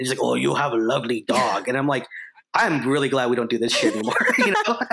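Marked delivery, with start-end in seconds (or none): 0.2-1.7 thick, heavy put-on Korean accent. Recalling a Curb Your Enthusiasm episode, do Bobby Lee's heavy Korean accent. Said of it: "playing a Korean guy with just this heavy accent".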